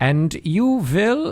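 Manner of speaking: put-on clumsy, half-hearted German accent. Show how he once in a while tries to Germanize it in the film, with a bad German accent. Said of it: "tries to like Germanize it".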